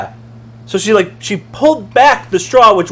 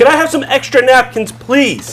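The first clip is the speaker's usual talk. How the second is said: mock-rude, put-on unfriendly tone; 5 semitones higher than usual. Retelling asking her for extra napkins, voicing your inner tone; retelling a not-nice tone. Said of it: "In a very nice tone, not like this tone".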